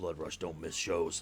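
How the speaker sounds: whispering under breath, muttered. Voicing a character overheard muttering to himself: whispering under his breath. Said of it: "you just hear him whispering".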